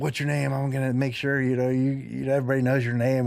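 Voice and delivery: hectoring, hollering drill-instructor voice. Retelling a man screaming and spitting in the speaker's face, imitating a man hollering. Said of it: "he's hollering at me".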